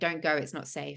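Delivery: ordinary talk, nothing marked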